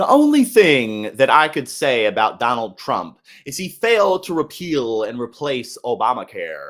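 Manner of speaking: animated, loud, projected delivery with wide swooping pitch. Showing how a Republican presidential hopeful talks: Vivek Ramaswamy impression. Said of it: "that's how Vivek talks".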